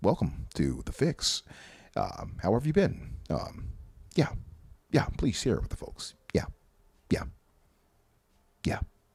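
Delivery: soft, hushed, smooth public-radio host style. Joking about a guest walking in, the speaker does a Paris impression by way of NPR. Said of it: "like Paris by way of N P R".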